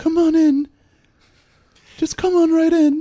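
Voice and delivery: tiny, very high little voice. Retelling a man buzzing a mansion intercom, the voice answering: little voice. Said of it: "you hear this little voice like this".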